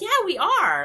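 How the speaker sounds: high, loud, excited and eager voice. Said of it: "And they were like".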